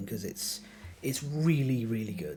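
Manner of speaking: emotional, choked up, words catching in the throat. Recommending some Kingdom Death content, the speaker admits being choked up. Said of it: "I'm getting a bit choked up now again".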